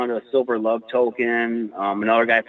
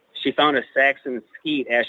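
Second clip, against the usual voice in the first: ordinary talk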